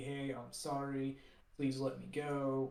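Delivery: slow, sarcastic, mocking, insincere tone. Recounting a manga scene, Luffy mockingly apologizing to Buggy. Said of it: "Luffy's kind of mockingly mockingly telling like Buggy".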